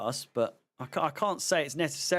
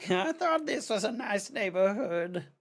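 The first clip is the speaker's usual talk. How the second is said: put-on high-pitched, croaky old woman voice; 7 semitones higher than usual. Voicing a line in an accent they cannot place, croaky old-woman voice. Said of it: "I don't know what accent that was. Croaky old bag".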